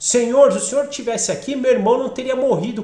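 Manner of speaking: loud, fast, demanding tone. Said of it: "quase que meio que cobrando".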